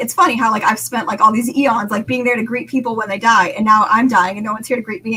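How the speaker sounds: ordinary delivery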